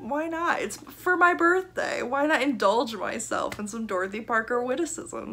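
high, eager, excited voice.

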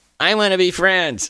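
put-on tiny, high, soft, vulnerable voice. Quoting one's own email that started a book club: put-on tiny vulnerable voice. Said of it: "I like that voice you use because you do feel vulnerable and tiny and squishable".

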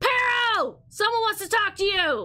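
shrill, loud, high-pitched shout. Narrator voicing a character calling toward the eye, shouting loudly. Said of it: "shouts loudly in the direction of the eye".

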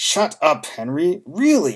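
very slow words forced through gritted, clenched teeth. Narrator reads Mom's line to Dad, said through clenched teeth. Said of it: "said between clenched teeth".

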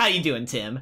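sassy character voice, full of attitude.

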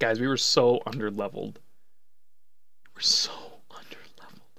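emotional, in tears. Right after beating Red at the cost of three team members, the player tells the guys, crying. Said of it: "I'm literally crying right now".

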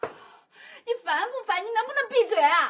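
tearful, annoyed snapping. An older sister snapping at her sibling who scolds her, crying. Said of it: "你怎么哭了？".

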